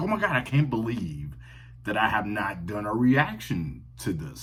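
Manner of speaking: ordinary talk, nothing marked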